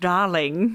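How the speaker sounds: put-on British accent. Showing how the word darling sounds best: British accent. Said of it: "in a British accent".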